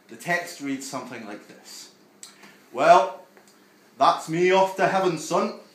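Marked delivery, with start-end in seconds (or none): 2.7-5.5 put-on Yorkshire accent, booming, loud and high. Reading aloud a text pretending to be a dead grandparent, yorkshire accent. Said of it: "I don't know why he's from Yorkshire".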